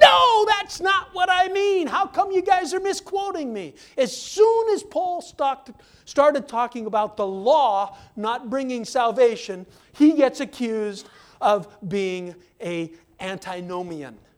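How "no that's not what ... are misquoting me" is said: high, full-throated shout at the top of the lungs. Acting out Paul answering misquotes in a Bible study: Paul shouting at the top of his voice. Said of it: "Paul shouting at the top of his voice".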